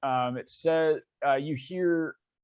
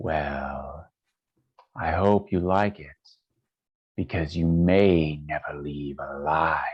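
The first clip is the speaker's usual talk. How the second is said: woman's voice pitched far down; 11 semitones lower, 4 dB louder than usual. Voicing a large figure greeting the group: very low-pitched female voice. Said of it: "a female voice, but it's pitched very low".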